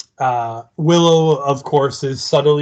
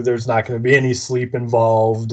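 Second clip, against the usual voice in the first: plain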